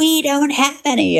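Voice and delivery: play-acted, very high, drawn-out dismissive scream. Retelling how they answered a man demanding money, retelling own scream. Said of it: "I screamed back".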